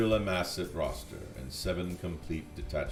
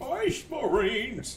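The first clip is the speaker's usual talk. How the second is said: put-on old man yell, much higher. Mocking a war boss yell that sounds like someone's grandpa: imitating a grandpa yelling. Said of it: "it just sounds like someone's grandpa yelling".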